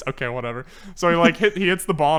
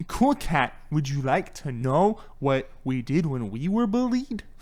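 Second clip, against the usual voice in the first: put-on tipsy voice, straining to enunciate clearly; 5 dB quieter than usual. Imitate him a little tipsy in the backyard, as tipsy Erik Estrada enunciating hard. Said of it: "trying so hard to enunciate".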